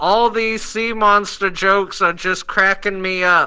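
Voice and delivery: loud, slow yelling.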